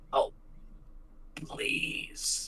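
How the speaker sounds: gurgling, burbling, breathy whisper like a last breath. Voicing a dying child who falls into the tavern: burbling dying plea. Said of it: "the last thing that burbles out of his mouth is".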